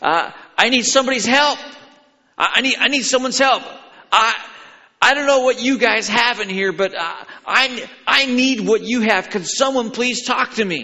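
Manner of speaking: yelling loudly. The speaker retells a man jumping from his pew during the service, shouting in a loud voice. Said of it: "he just shouted in a loud voice".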